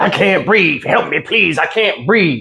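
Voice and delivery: mock, high-pitched begging cry. Speaker mocks someone pleading while cops were arresting them: imitating someone screaming. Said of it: "screaming out the typical slogan".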